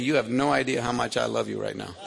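usual speaking voice

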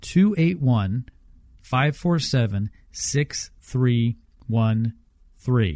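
slow, deliberate, unhurried, spaced-out readout. Repeating a phone number for listeners: saying the number slowly. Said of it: "I'll say it again slowly".

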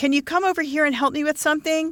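sugary-sweet, very high voice. Reading a story aloud, voicing the woman Donnie speaking to a man, in a sweet voice. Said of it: "Donnie said in a sweet voice".

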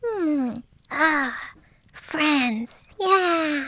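slow, high-pitched sleepy mumble. Voicing a sleeping character who turns over: mumbling in sleep. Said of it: "Finny turns in his sleep and goes".

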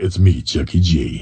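deep radio DJ announcer delivery. Imagining introducing himself to people who don't recognize him, in his radio voice. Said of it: "I'll have to go to my radio voice and go".

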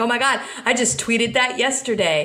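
ordinary talk

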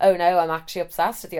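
ordinary delivery

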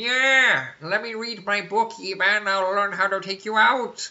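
high, loud, bookish, brainy villain voice. Playing a villain who studies a book: scholarly Skeletor voice. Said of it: "a scholarly Skeletor".

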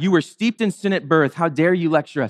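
normal talking voice

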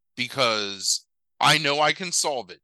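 ordinary delivery

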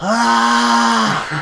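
high, loud screamed "ah".

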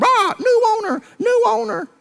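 very high, slow, drawn-out parrot squawk. Telling a story, the speaker imitates the church's old parrot: squawking parrot voice. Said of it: "that old parrot started squawking".

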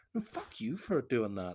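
put-on rude, angry, hostile snapping tone. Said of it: "you're clearly being a bit of a asshole".

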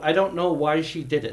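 ordinary delivery

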